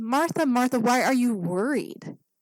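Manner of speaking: kind, gentle and tender voice. Speaker acts out Jesus answering Martha, retelling gently. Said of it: "not harshly, but gently".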